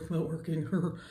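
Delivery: slow, soft, low cartoon voice. Working on a look on camera, speaking in a Beavis and Butthead voice. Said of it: "just sounded like Beavis and Butthead".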